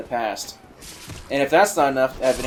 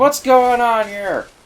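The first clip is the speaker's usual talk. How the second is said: high, slow, freaked-out panic. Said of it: "So I was kinda freaking out".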